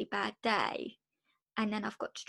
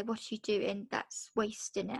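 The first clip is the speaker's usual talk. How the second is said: plain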